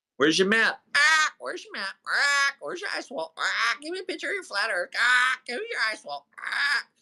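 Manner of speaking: thin, needling voice pitched very high, no bass. Mocking the other side's stock demands: mocking voice with zero bass. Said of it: "He has zero bass in his voice".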